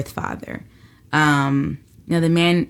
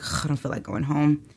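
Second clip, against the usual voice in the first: put-on mutter, quieter; 6 dB quieter than usual. Retelling own words at sixteen while being driven home: imitating muttering under breath. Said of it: "I just said under my breath".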